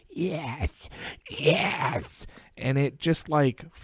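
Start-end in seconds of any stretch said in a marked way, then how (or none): 0.2-2.3 eerie, whispered female demonic voice. Retelling a voice heard on a cemetery recording, imitating a demonic female voice. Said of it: "this like demonic female voice".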